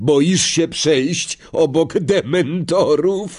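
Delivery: taunting shout. A boy standing in a queue calls out to a classmate staying behind, shouted. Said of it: "krzyknął Malfoy".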